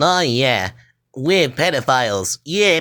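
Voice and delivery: classic cartoon character voice. Mocking a person who always did the classic Sonic voice: classic Sonic OVA voice. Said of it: "you know the classic Sonic voice, like, the O V A voice".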